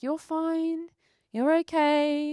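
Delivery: put-on slow French accent, okay stretched long. Retelling how Heloise, holding the speaker's hand, calmed them down, in Heloise's French accent. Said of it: "in her like um French accent".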